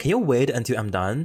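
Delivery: ordinary talk, nothing marked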